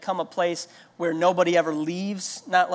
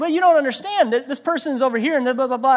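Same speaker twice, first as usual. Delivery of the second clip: frantic, overwhelmed, panicked protesting babble; 7 semitones higher, 4 dB louder than usual. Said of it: "they're just freaking out".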